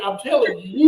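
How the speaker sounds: usual speaking voice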